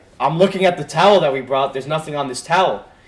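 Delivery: ordinary delivery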